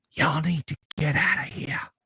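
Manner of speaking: soft, quick, sibilant, feminine hissing whisper. Voicing a voice heard in the woods: soft, sibilant feminine voice. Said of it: "soft, sibilant, feminine, say".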